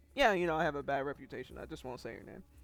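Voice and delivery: dismissive, nonchalant tone. Retelling how a character brushes off blame: imitating a dismissive shrug-off. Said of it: "It's that same vibe".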